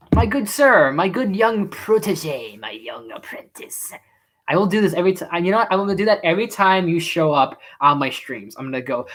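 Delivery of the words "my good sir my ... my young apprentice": slow, drawn-out evil villain drawl. Greeting a viewer who shows up on the stream, doing the Star Wars Emperor voice. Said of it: "every little line from the Emperor from Star Wars".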